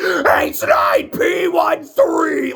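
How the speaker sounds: very high, loud, obsessed-sounding shriek. Describing a movie character who screams this name throughout; retelling a scream. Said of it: "he's just screaming this name".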